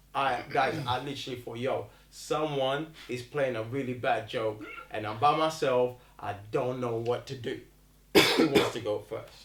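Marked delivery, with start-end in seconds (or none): none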